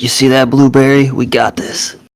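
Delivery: hushed, voiced stage whisper. Speaking in character to another character during combat: half-whispering in character. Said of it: "whisper to Kaz and be like".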